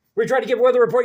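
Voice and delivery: rushed, rattled-off delivery. Showing how radio hosts sounded squeezing in a weather report, frantic weather-report voice. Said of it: "So you sound like this when you're talking".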